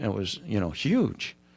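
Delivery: huge said sarcastically, with irony, not meant. Telling how the talk of money came out with a new employer: sarcastic. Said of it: "That's why I'm saying it sarcastically".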